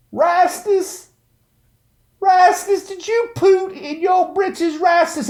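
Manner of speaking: very high, exaggerated, caricatured put-on Southern voice. Acting out how he would put on a voice talking to Rastus, imitating a Bagger Vance voice. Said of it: "And he'd use that voice".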